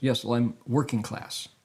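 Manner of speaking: ordinary talk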